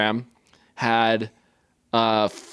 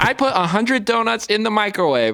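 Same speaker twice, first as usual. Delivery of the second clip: very high, bouncing video-host lilt, two-note sing-song; 9 semitones higher than usual. Asked for their best TikTok accent, the speaker tries a TikTok accent. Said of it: "can you give me your best TikTok accent?".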